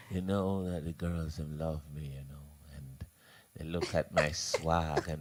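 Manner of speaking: very low, deep, hushed whisper with bragging swagger. A speaker imitating DJ Lollipop, in a whispering DJ Lollipop impression. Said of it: "Why I'm whispering?".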